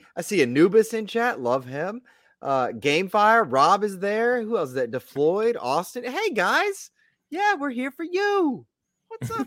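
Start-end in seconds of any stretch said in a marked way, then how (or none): 6.1-9.5 very high-pitched put-on voice. Greeting the people in chat while sounding like Elmo. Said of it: "Why are you sounding like Elmo?".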